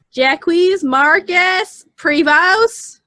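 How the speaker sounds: heavy American accent on the name. Announcing he'll pronounce the name, then strongly American accent on the name. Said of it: "I'm gonna pronounce it really American".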